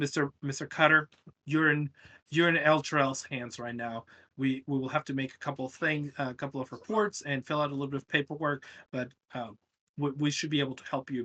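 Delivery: ordinary talk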